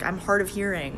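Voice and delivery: ordinary talk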